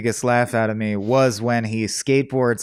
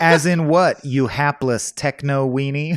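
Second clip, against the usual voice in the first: plain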